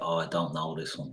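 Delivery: soft, cocky, falsely modest tone. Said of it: "the way I do be cocky and say".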